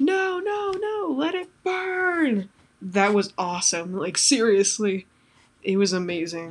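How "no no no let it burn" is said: mock long, very high, very slow shriek. Recapping a teaser with spoilers, the speaker acts out a character's line: retelling a scream. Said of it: "Lori screaming like".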